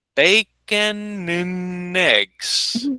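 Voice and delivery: very slow, deliberate, each word drawn out with care. Asking listeners to listen carefully, saying the phrase very slowly. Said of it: "I'm going to say it very slowly".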